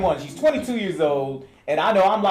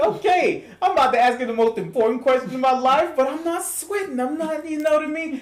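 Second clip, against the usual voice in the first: pumped-up, psyched, hyped tone. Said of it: "I'm feeling, I'm like".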